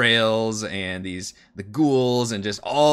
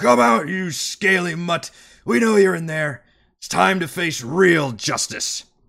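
put-on booming, resounding older voice, pitched high; 7 semitones higher than usual. Game master voicing a character calling on someone hiding inside, booming older voice. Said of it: "you hear a booming older voice".

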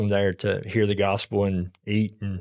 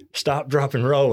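imitated yelling, called out a bit higher; 5 semitones higher than usual. Retelling the wife's reaction to the fire: imitating wife yelling. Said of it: "she's yelling".

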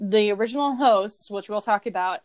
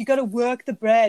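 put-on thick, heavily laid-on northern English accent; 2 semitones higher, 4 dB louder than usual. Describing a baking judge from Cheshire, imitating Paul Hollywood with thick accent. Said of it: "he's got this crazy thick accent".

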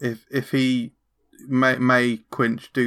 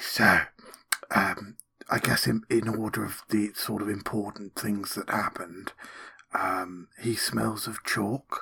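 character whisper, much lower and quieter; 3 semitones lower, 8 dB quieter than usual. Roleplaying, Quinch leans in to another character, whispering.

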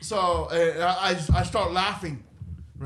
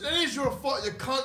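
put-on, pitched-up Irish accent; 8 semitones higher, 3 dB quieter than usual. Retelling what a stranger he bumped into said back to his apology, in an Irish accent. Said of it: "he was Irish".

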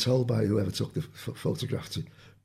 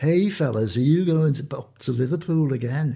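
put-on Scouse Liverpool accent, spoken with a raised voice; 4 semitones higher, 5 dB louder than usual. Retelling what George asked every weekend: George's Liverpool accent. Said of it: "with his accent, Liverpool accent".

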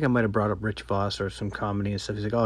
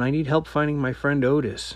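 acted-out man's yell, called out as across a room; 5 semitones higher than usual. Speaker retells a man yelling up to the comedian on stage, retelling a man yelling. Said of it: "He starts yelling".

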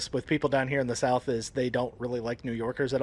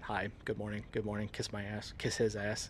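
mock mutter, lower and quieter; 4 semitones lower, 12 dB quieter than usual. Retelling a film scene of greeting executives in a boardroom: muttering under his breath. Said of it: "underneath his breath, he goes".

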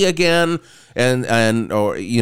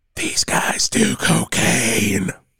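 slow, hushed, confiding whisper. Retelling what an aunt whispered into an ear: imitating Aunt Lori whispering. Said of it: "leans into my ear and whispers".

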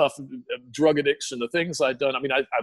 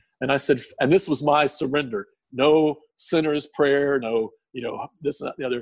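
ordinary delivery

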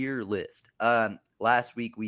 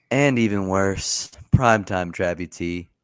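bored, flat, apathetic, energy-less, raised voice; 2 semitones lower, 7 dB louder than usual. Introducing the others one by one, in an apathetic intro. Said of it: "What is this apathetic ass intro?".

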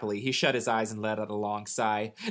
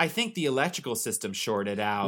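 ordinary delivery, nothing marked

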